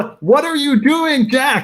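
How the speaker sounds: very high-pitched shouting. A character yells back at Jack through his watch: yelling back through a watch. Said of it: "He's yelling back at you through the watch".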